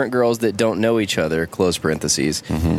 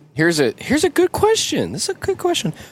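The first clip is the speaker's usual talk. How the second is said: put-on voice, pitched much higher. Moving from chat to a question, using a special question voice. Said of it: "It's my question voice".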